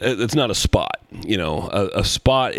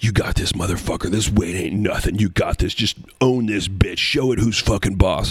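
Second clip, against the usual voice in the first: put-on whispering. Retelling a gym stranger's motivational words during a squat: imitating someone whispering. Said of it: "He's, he's whispering things like".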